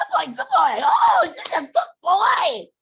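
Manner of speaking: very high, swooping, gushing excited voice. Showing how to praise a dog after a success: excited praise. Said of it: "they like that excitement".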